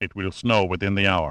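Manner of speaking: plain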